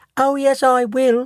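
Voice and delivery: very high, tiny, small, slow squeak. Narrator reads the son's reply to his parents; tiny squeaky Mike Teavee voice. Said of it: "squeaked the tiny voice of Mike T V".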